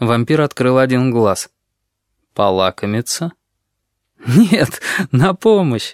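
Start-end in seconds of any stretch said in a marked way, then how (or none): 4.3-5.9 high, laughing delivery, bursting into laughter. The grasshopper answers the pale vampire's question, bursting out laughing. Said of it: "расхохотался кузнечик".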